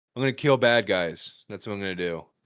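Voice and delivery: fake flat, emotionless delivery. Retelling a senior's answer at the senior-night microphone, imitating a flat, emotionless delivery. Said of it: "he showed no emotion".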